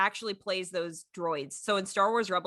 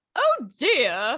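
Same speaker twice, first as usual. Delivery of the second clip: prim, flustered, high raised female droid voice; 6 semitones higher, 8 dB louder than usual. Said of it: "the one that talks like this".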